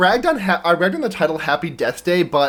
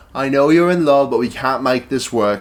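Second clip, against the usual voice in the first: put-on English accent; 3 semitones lower than usual. Retelling what a professor in a movie says: British impression. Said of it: "That's my British impression".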